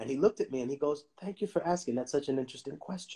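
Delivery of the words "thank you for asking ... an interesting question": put-on very soft-spoken voice, quieter. Retelling a professor's answer to a question: imitating someone speaking very softly. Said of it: "very softly".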